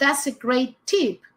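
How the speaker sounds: ordinary talk, nothing marked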